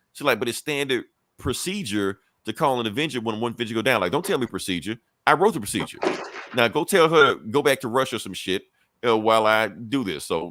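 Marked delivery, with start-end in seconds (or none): none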